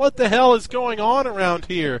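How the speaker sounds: high, loud scream at the top of the lungs. Retelling running out of their room, imitating themself screaming. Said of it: "I run out of my room screaming".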